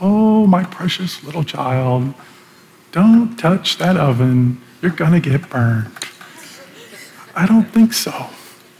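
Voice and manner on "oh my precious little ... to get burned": nice, sweet, gentle, tender motherly tone. Acting out a mother warning her child about the oven, nice, soft, tender voice. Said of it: "nice, soft, tender voice".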